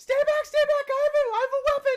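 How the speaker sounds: terrified screaming. The others burst into the room and hear Pinchwit, screaming in terror as Pinchwit. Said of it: "screams in terror".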